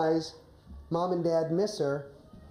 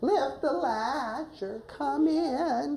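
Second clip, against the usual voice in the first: put-on high, slow, feeble old woman voice. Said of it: "a high-pitched voice".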